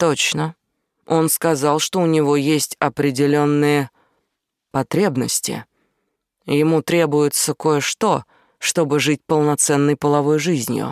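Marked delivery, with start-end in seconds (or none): none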